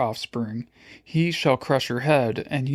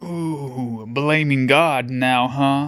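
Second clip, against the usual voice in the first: slow, taunting sneer with a drawn-out ooh. Reading a dragon taunting a character for blaming God: sneering. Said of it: "he sneered".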